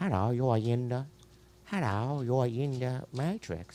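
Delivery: put-on Chinese English accent. Joking about a matrix scene, say the greeting in a put-on chinese english accent. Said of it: "I'll do a Chinese English accent".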